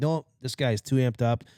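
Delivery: ordinary delivery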